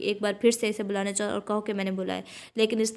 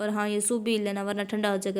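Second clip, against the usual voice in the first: ordinary delivery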